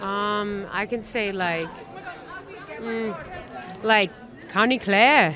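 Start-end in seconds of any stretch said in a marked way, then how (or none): 4.5-5.4 attempted Irish accent, said plainly. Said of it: "can you do an Irish accent".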